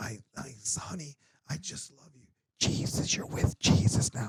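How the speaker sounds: hushed, breathy whisper the whole way through. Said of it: "she was doing that the entire thing".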